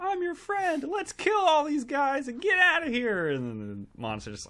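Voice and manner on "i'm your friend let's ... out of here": put-on yell, higher and louder. Retelling a film scientist yelling at an alien: imitating someone yelling. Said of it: "yelling at the alien".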